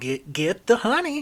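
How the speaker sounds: squeaky, shrill, loud, very high goblin voice. Narrating the scene, the storyteller voices the honey goblin as it calls out. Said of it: "honey goblin just calls out".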